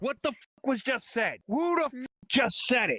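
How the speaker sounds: furious, high voice. Demanding to know who made the remark about his girl, furious. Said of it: "Now I'm fucking pissed".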